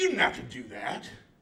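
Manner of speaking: plain voice of a man in his seventies. Retelling what his elderly neighbor said after he shoveled his driveway, imitating Virgil. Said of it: "that's a spot-on impression".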